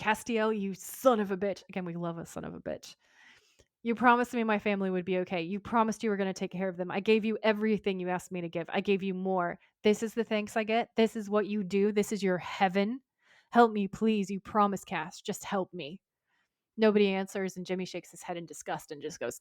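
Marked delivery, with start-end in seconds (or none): none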